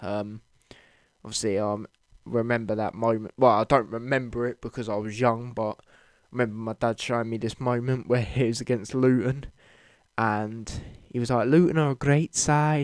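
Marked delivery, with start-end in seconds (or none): 11.5-12.8 put-on Liverpool Scouse accent. Retelling a moment your dad showed you, quote the man, imitating his Scouse accent. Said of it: "with a Scouse accent like he's got".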